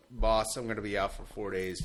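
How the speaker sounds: ordinary talk, nothing marked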